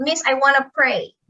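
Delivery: normal talking voice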